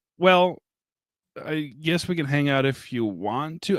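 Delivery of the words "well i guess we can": plain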